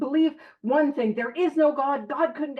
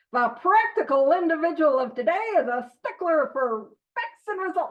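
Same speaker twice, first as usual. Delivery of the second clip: put-on, old-fashioned mid-Atlantic accent; 2 semitones higher than usual. Reading a paragraph aloud to listeners in an old-timey mid-atlantic accent. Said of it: "an a mid-Atlantic accent, you know, like those old-timey people".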